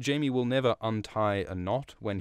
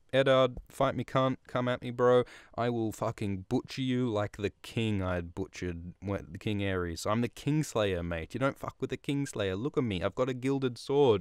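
normal talking voice

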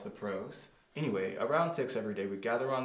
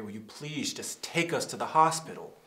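lightly sneering tone; 2 semitones higher, 4 dB louder than usual. A character recounts what she said to a hesitant cab driver, with a slight sneer. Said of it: "with a slight sneer".

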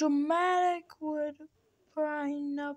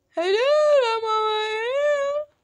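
high, loud, drawn-out, exaggerated theatrical taunting call; 8 semitones higher, 5 dB louder than usual. Calling out to an opponent between rounds, in a dramatic call. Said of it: "I'm gonna make it more dramatic".

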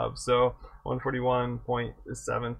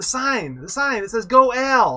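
put-on child's voice, shrill, very high-pitched and loud; 11 semitones higher, 9 dB louder than usual. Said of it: "he's shouting to his dad".

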